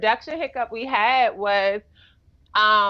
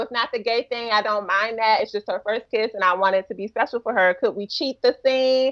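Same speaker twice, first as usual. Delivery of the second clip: normal talking voice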